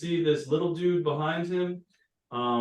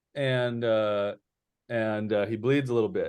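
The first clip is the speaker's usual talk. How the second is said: plain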